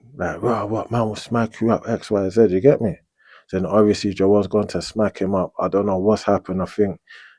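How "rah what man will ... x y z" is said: ordinary delivery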